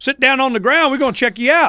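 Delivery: mocking, high, sneering bully cop voice.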